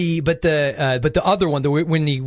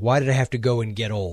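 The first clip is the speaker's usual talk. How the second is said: put-on muttering under breath, much lower; 4 semitones lower, 3 dB quieter than usual. Recounting a man speaking to his dog, imitating a mutter under his breath. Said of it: "just under his breath says".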